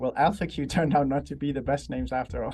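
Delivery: ordinary talk, nothing marked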